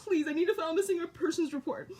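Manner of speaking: play-acted distressed, tearful, crying, begging tone. Retelling a call to the police about a missing son: imitating own crying plea. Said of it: "I am crying because this is stressful".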